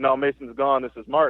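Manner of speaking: ordinary talk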